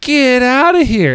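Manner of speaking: high, slow, dismissive brush-off tone.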